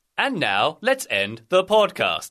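automated announcement voice. Joking about being a British Siri, ending the podcast: put-on Siri voice. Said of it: "That sounded more like a train announcement than Siri".

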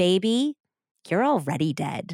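play-acted chilling, ice-cold, stern delivery. Retelling what a woman said over the phone, imitating someone speaking coldly. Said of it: "she said very coldly".

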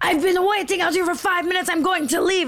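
play-acted screaming, pitched very high. Retelling a woman at the door screaming at the person who opened it, imitating her screaming. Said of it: "She's screaming at Chris".

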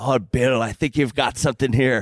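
put-on speaking in an Irish accent. Retelling a golfer trying on a cardigan: Paul McGinley Irish accent. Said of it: "as only as he can say in his Irish accent".

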